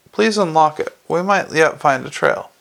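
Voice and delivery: ordinary delivery, nothing marked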